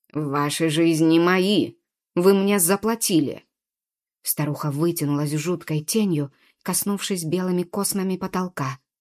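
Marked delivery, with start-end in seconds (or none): 0.2-3.5 growling, snarling. Reading a story aloud, the narrator gives the hag's threat, growling. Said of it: "прорычала Карга".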